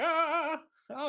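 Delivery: very high-pitched cartoon villain voice. Describing a movie scene as He-Man-esque, doing a Skeletor voice. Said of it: "With like Skeletor, be like".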